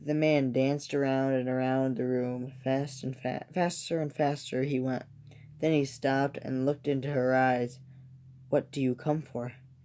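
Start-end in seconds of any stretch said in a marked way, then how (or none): 8.5-9.5 small, shivering, trembling voice. She asks the man who danced around the room, in a small, shivering voice. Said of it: "in a small voice that shriv- shivered and shook".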